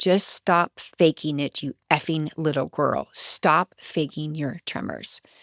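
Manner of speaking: play-acted patronizing, talking-down, condescending delivery. Retelling how a man spoke to the speaker: mock-condescending. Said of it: "He said in a condescending tone".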